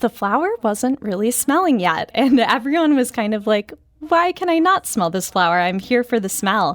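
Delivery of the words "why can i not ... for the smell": ordinary delivery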